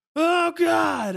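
put-on shrill, very high, very loud scared yelp. Retelling a shadow rushing at the camera while filming, acting out a frightened cry. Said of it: "acting out fright at a shadow".

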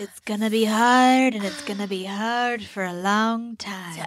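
over-the-top, slow, dramatic, drawn-out Broadway-style theatrics. Imitating a reality star's tearful moment in an overdramatic Broadway voice. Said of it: "showgirls, like, voi-, Broadway voice".

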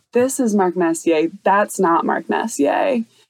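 ordinary talk

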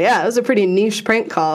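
usual speaking voice

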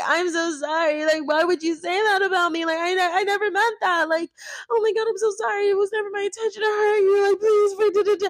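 high, whiny, mocking playing-the-victim voice.

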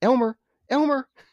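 acted-out, very high voice calling a pet. Retelling a scene where Brian calls out after the guy leaves, Brian calling like a dog. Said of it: "calling for Elmer like a dog".

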